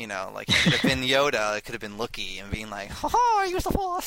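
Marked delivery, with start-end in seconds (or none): 2.9-4.1 badly done, squeaky, very high cartoon voice. Imagining the character showing up and speaking: bad Yoda voice. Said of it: "that was not even a Yoda voice".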